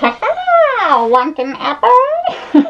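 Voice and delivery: very high, very slow, swooping fairy-tale witch voice. Pretending to walk past kids on Halloween as the witch: put-on witch voice offering apples. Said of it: "walk by all the little kids in the neighborhood like".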